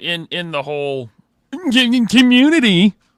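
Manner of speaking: "community" very loud, high. Praising a man as one of the nicest guys, imitating how Chad says it. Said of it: "because that's how Chad says it".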